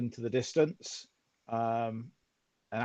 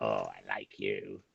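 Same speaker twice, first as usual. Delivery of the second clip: very low, slow, creaky talking-rat voice; 9 dB quieter than usual. Voicing a rat asked to search a tent: talking rat voice. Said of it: "a rat would do".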